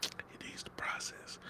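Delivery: mock whisper, soft and slow.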